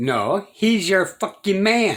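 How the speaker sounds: worked-up, excited voice. Arguing against calling a partner a person: getting fired up. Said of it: "I'm getting fired up".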